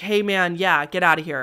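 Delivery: ordinary talk, nothing marked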